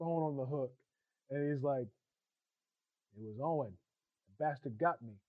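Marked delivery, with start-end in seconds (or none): none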